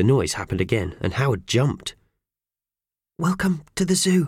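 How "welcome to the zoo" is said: hushed whisper, much higher. A woman greets a nervous Howard at the zoo, whispering. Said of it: "whispered the woman".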